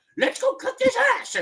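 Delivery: high nasal frog puppet voice. Performing a cartoon frog puppet talking to another character about going off to confront someone, in a high nasal puppet voice. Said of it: "I can do Yoda and Kermit talk".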